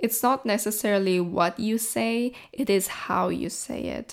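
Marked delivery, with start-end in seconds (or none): none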